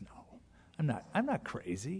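unruffled, very calm, soft and very slow. Retelling how he answered an insult in the courtroom: retelling a very calm reply. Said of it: "he said it very calmly like that".

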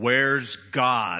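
deep, dropped, stern preacher voice. Retelling a preacher questioning an eight-year-old boy, in a deep booming voice. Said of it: "in a deep booming voice".

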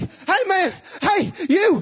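put-on very high, very slow, drawn-out holler. Retelling how a man ran out calling after them: imitating a man shouting after them. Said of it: "this man comes tearing out".

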